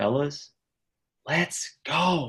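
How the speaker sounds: loud theatrical whisper. Retelling how a roommate came in on friday: imitating a loud whisper. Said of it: "in like a, in like a loud whisper".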